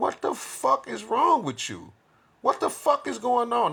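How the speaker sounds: very high, swooping, angry outburst of disbelief. Retelling own reaction to a partner crying: imitating own angry reaction. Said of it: "I'm getting angry".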